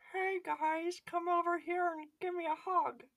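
very high-pitched cartoon kid voice. Likening someone to Carl Wheezer, then acting it out: Carl Wheezer voice. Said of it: "he's like real life Carl Weezer".

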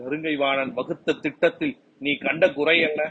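plain

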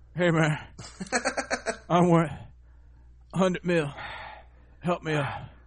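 put-on hard, heavy breathing. Retelling a story about a man, imitate him breathing hard like Fat Albert. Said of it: "breathing all hard, like Fat Albert".

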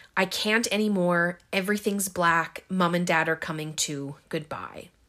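ordinary talk, nothing marked

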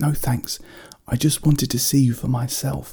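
high-pitched stage whisper. A child still awake at night half-whispers back to the one offering help: half-whispered back. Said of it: "she whispered back".

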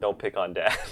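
play-acted, light, jokey, playful, teasing scolding tone. Imagining how Michelle came out to the garage: imitating playful scolding. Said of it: "playfully saying".

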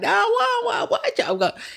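put-on heavily laid-on country accent, very high pitch. Recapping a conversation, imitating Candy in her real country accent. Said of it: "Candy gives us real country accent".

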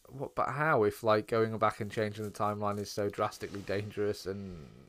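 ordinary delivery

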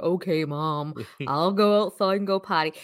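slow, drawn-out, doleful, gloomy cartoon-donkey drawl. Giving Dexter an imagined voice: Eeyore voice. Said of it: "Dexter sounds like Eeyore".

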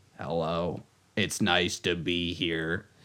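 very slow, soft, croaky frog-in-throat voice-box voice. Speaker imitates how a man sounded greeting people, croaky voice-box voice. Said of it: "It sounded like he was talking with like a voice box".

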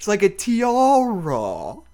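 high, lilting fake English accent, "tiara" very drawn out. Imitating how she talks for a co-host, Cho's English accent impression. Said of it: "That's her English accent".

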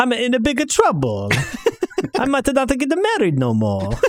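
put-on high Italian accent. On a podcast, keeping up a weeks-long bit in a stereotypical Italian accent. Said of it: "Pete's been doing a stereotypical Italian accent".

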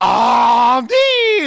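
loud, put-on French accent. Asked to do a french accent, saying a name in mock french accent. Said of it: "can I hear you do a French Accent? ... That is how we will do your name".

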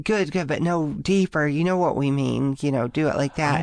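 ordinary talk, nothing marked

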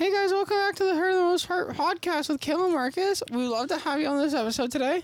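high ventriloquist voice, spoken with mouth shut. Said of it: "You have to keep your mouth shut".

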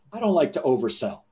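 acted, dead-straight, matter-of-fact deadpan understatement. Retelling what the man who introduced him said, imitating a deadpan reply. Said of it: "he looked me deadpan and he goes".

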